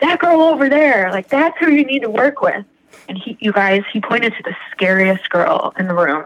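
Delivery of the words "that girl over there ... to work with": mock, sudden, raised half-shout, pitched up. Retelling how a gentle man picked her a sponsor, imitating him kind of shouting. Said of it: "he immediately kind of shouted".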